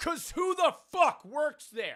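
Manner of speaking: shrill screaming pitched very high. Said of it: "why are you screaming?".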